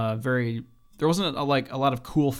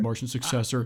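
mock reverent, tearful voice. Teasing another speaker about loving a show: imitating Sam, reverent and tearful. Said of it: "You're, like, crying".

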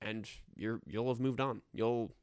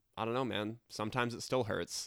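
ordinary talk, nothing marked

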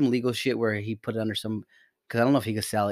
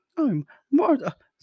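very high, loud woman's voice; 6 dB louder than usual. Trying out her voice after admitting you don't know how to do it, in an attempted Martha voice. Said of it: "I almost want to do her voice".

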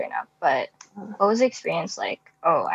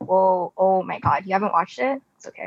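ordinary talk

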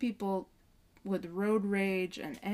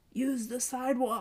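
imitated, put-on yell, called out; 3 semitones higher than usual. Retelling what a driver in a pickup truck yelled: imitating a yell. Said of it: "he yells out to me".

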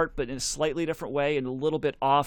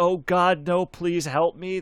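mock man's scream, higher; 3 semitones higher, 4 dB louder than usual. Describing a scary album, the speaker acts out a man on it, imitating a man screaming. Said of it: "he's screaming".

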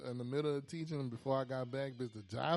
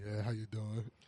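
put-on very low voice, lower pitch; 4 semitones lower than usual. Retelling greeting a coworker at work: imitating own very low voice. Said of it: "voice lower than a bitch".

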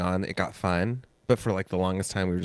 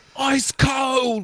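very high, loud yelling tirade, "cold" drawn out; 5 dB louder than usual. Acting out yelling at the kitchen staff: pretend yelling at kitchen staff. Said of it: "Yell at them".

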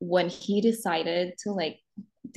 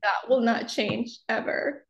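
tearful, pitched-up voice, talking through tears; 5 semitones higher than usual. Talking about learning where she stands in someone's life, crying while talking. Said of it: "it makes me cry right now".

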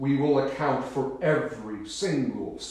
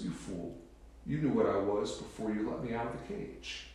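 mock gloating, mocking laugh through the words; 3 semitones lower, 9 dB quieter than usual. Telling a joke where the freed snake mocks the man: laughing mockingly as the snake. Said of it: "the snake laughs at him and goes".

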